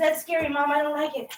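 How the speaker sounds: speaking as a cat. Mopping while a scared cat watches, voicing the cat Figaro. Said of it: "He says".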